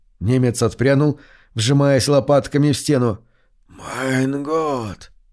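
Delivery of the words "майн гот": raspy, creaking zombie whisper. A zombie whispers to the recoiling german, in a hoarse, creaky zombie whisper. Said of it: "прошептал зомби с сиплым скрипучим голосом".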